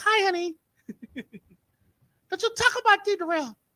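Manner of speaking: sweet, little, very high-pitched voice. Retelling what Mahogany said to someone, in Mahogany's sweet high-pitched voice. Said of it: "Mahogany got a sweet little high pitched voice".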